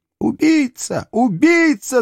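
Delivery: piercing, very high, accusing shriek. After her husband confirms the children are dead, the wife is screaming. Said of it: "закричала его жена".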